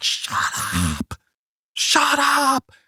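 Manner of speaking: very high, stretched-out, drawn-out shrieking. Retelling how Jamesy shrieked at a man repeating himself for hours: imitating Jamesy shrieking. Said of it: "Jamesy's shrieking at him like".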